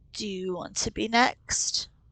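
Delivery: low, rumbling half-whisper. Sluggoth speaks to her during the scene, in Sluggoth's rumbling half-whisper. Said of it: "lowers his voice to a rumbling whisper".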